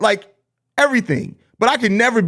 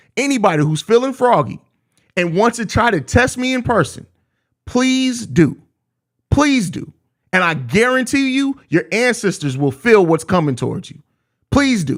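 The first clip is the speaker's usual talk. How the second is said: grave, deadly serious delivery; 3 semitones higher than usual. Warning anyone who wants a test in person: serious voice. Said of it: "hear the seriousness in my voice".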